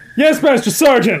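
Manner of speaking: high, all-out yell at the top of the lungs. The narrator answering Master Sergeant Ruiz, yelling as loudly as possible. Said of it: "I yelled as loudly as I could".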